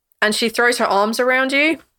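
ordinary talk, nothing marked

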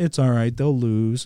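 mocking put-on whiny voice. Mocking a football player's dismissive comment after a loss: mocking Chase Claypool impression. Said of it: "you sound like a little bitch".

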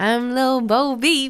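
fake, very slow put-on southern drawl. Imitating a woman's line, tries a put-on Southern accent. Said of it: "Does she have a southern accent? Yeah. I'll try".

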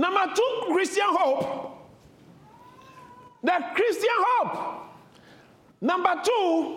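high, slow, drawn-out, ringing preacher-like shouted proclamation.

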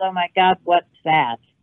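ordinary talk, nothing marked

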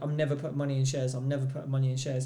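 ordinary talk

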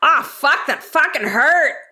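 put-on Old West frontier speech. Player voicing a character who suddenly feels pain, in an old west way. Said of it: "in a very Old West Mossy kind of way".

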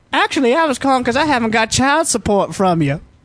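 high female voice. Improvising a phone-call scene with a partner, playing the girl. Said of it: "And I'll be the girl".

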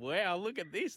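amazed, laughing. Retelling seeing a handbag full of cash: retelling own laughing while talking. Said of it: "I was standing there laughing, going".

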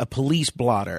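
normal talking voice

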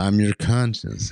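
little voiced stage whisper. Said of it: "your little whisper there an impression of [name]".

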